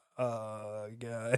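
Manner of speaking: put-on chilled-out pilot voice. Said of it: "Maybe that's why they sound like that".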